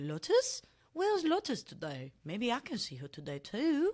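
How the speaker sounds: high, swooping dog voice with unplaceable accent. Voicing the speaker's dog, in the Monty voice. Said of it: "that's the Monty voice. Don't try and place the accent".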